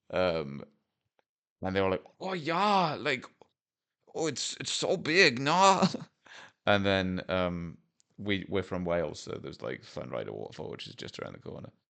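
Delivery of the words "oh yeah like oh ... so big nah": very high, slow, put-on Dutch accent. Retelling what Dutch visitors said about the sight, in a Dutch accent. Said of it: "I'm doing that accent tastefully anyway".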